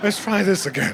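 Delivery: put-on, barely held-back laughter in the voice. Retelling a phone call about a bill, imitating the woman on the line laughing. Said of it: "I know she was laughing because she goes".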